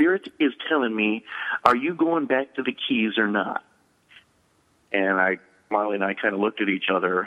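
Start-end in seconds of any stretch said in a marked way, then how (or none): 0.0-3.6 ever so charming Southern drawl. Retelling what a friend asked at dinner: Southern accent imitating Murray. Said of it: "ever so charming Southern accent".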